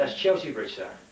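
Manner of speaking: ordinary talk, nothing marked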